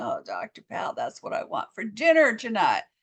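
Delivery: drooling, mouth-watering, hungry longing voice. Speaker acts out a viewer wanting the burger, imitating someone salivating with craving. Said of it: "now you're just salivating".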